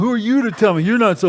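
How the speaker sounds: belligerent. Speaker imitating someone who refuses help: mock-belligerent. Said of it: "they say it in a belligerent tone".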